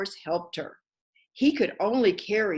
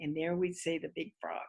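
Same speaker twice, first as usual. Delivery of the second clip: ordinary delivery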